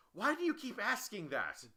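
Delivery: high pitched, loud, berating tone.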